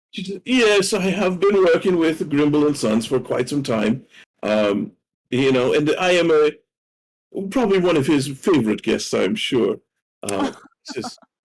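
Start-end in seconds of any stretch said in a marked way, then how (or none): 0.2-9.8 self-important, prim, pompous, proper society lady voice. A regular patron greets first-time visitors to an establishment, pompous, proper lady voice. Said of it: "she seems very kind of pompous and, and proper".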